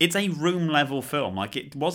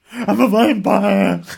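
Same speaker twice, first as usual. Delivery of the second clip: very loud, high-pitched, booming delivery; 7 semitones higher, 11 dB louder than usual. Quoting a film line after naming its star: Nicolas Cage impression. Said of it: "it stars Nicolas Cage".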